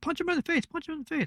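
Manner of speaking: put-on very high, soft, tiny six-year-old girl voice. Retelling a girl in the front row cheering at a match: imitating a little girl's voice. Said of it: "a little six-year-old girl's voice going".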